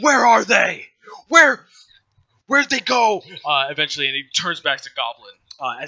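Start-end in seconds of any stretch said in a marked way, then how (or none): 0.0-3.2 very loud, high, demanding yell. Narrating to the players, voice Thenamir shouting at people in the camp: Thenamir yelling. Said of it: "he's just like yelling at people".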